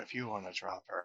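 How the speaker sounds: whispering in character voice. In a game, speaking in character to Oberon: whispering in character. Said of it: "I just kinda whisper Oberon and go".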